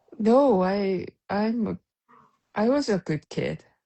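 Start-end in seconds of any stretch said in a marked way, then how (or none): 2.6-3.6 sarcastic tone broken by hesitant, telling pauses. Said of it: "every hint of delay in the way you say that feels very sarcastic".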